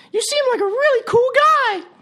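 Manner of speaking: very high-pitched voice. Telling a joke, an unseen voice speaks to a man at his drink; high-pitched voice. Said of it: "he hears a high-pitched voice that says".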